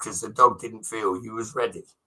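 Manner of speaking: ordinary talk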